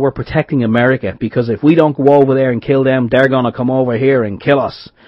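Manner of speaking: clumsy, bad put-on American accent. Parodying the message about americans going in to kill: bad american accent. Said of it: "in a bad American accent".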